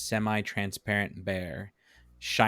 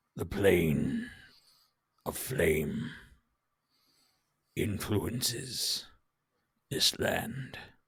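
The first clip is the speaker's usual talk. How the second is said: deep, rough, gravelly voice, broken into halting pieces; 3 semitones lower than usual. The narrator voices the bear speaking after it scans the area, low, gravelly voice. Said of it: "in this low, gravelly voice".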